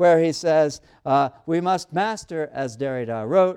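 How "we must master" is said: normal talking voice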